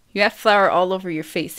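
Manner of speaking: ordinary delivery, nothing marked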